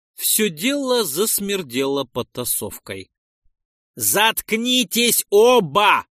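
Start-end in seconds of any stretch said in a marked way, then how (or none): 4.0-6.0 loud, barked, drawn-out, pitched-up delivery. The narrator steps between two quarreling partners and barks at them. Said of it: "рявкнул я".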